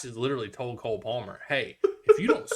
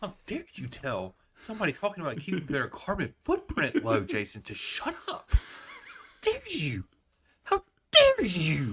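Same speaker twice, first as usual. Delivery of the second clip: shaming rant, pitch swooping up and down; 4 semitones higher than usual. Scolding another speaker for saying shut up: Greta Thunberg impression. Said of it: "That was my Greta, uh, Thunberg ... impression".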